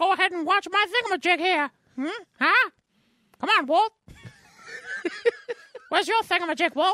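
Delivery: very high squeaky cartoon mouse voice. Joking about the Disney Plus thingamajig, imitating the Disney mouse. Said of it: "sounds exactly like the mouse would say that".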